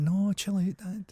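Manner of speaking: high, slow, drawn-out, easygoing peace-and-love voice. Joking about Jesus answering God: acting out Jesus. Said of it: "And then Jesus is like".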